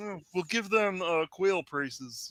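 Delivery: slow, drawn-out frog voice. Imitating Kermit acting the Daniel Day-Lewis role: Kermit voice. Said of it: "That's a good Kermit".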